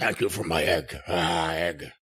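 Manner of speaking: very low put-on voice. Acting out thanks for the return of a stolen egg, use a put-on impression voice. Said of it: "I got to stop doing that voice".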